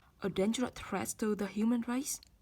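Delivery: rising, question-like tune on "race". Example of a question repeating information just heard: rising pitch on final race. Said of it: "Ngữ điệu đi lên".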